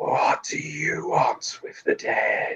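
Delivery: slow, whispered, deathly piercing tone. Narrating a story, a figure carrying a shovel speaks to the listener: deathly whisper. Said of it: "it whispers in that deathly tone".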